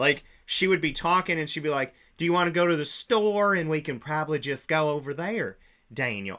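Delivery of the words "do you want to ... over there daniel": put-on light Southern accent. Retelling how his ex-girlfriend talked, light Southern accent impression. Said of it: "she did it a little bit".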